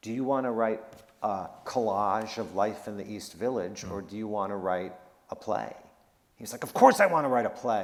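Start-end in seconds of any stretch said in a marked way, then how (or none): 6.6-7.8 indignant, heated, angry raised voice. Speaker retells a man's reply to her question about the play: retelling his angry reply. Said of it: "w- he was angry".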